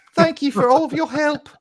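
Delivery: very high, loud, shrill falsetto lady voice by a man. Trying a girl's voice changer, the speaker thanks everyone: man doing a woman's voice. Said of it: "I sound like the Monty Python guys doing a woman".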